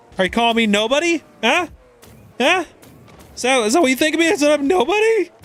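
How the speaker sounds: squeaky, breaking, very high cracking voice. The speaker deliberately leans into his voice cracking as he talks. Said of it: "I'm like leaning into my voice cracking".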